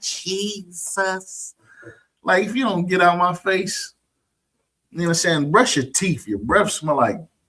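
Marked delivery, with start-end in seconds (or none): 0.0-1.5 pitched-up twang on the end of "jesus". Imitating churchgoers asking a question with a twang: imitating a twang. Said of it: "with that twang on the end".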